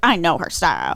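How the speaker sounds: put-on line slipped into a country accent. Retelling what a guy said about buying sunglasses, in a country accent. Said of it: "I said that in a country accent".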